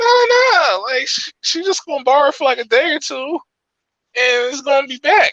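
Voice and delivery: voice pushed very high, very high-pitched. Retelling a friend's reply about lending a girl his laptop, imitating his high-pitched voice. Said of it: "his voice was so high pitched".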